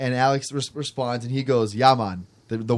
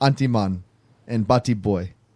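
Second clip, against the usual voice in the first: attempted Jamaican accent that slides into sounding Indian; 3 semitones lower than usual. Asked to say one of the jamaican slurs: attempted jamaican accent. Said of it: "that sounded more Indian than Jamaican".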